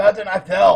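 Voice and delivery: very loud gruff bark. Player answering voices from outside a door as one of them; gruff voice. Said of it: "with their gruff voice".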